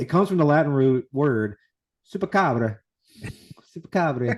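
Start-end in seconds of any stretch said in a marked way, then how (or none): 2.1-4.4 loud, belted Italian accent on supercabra. Speaker says he can't say this without it, in an italian accent. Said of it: "I can't do it without the Italian accent".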